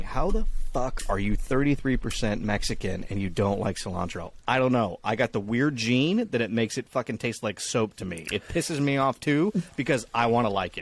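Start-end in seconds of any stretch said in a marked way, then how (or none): none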